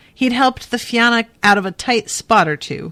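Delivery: ordinary delivery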